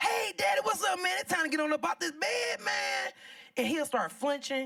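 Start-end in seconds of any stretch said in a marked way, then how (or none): 0.0-3.1 loud, pitched-up, mock raised voice. Retelling greeting her unconscious father in the hospital: imitating her own loud greeting. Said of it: "every day I go in the same attitude".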